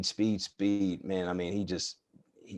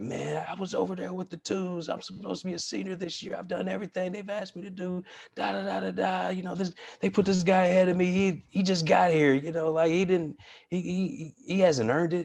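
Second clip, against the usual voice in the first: mock very high, angry yelling rant; 12 semitones higher than usual. Speaker reenacting venting on the drive home, retelling a venting yell. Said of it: "I'm just yelling and I'm just like".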